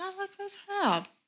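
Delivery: high, soft, puzzled tone.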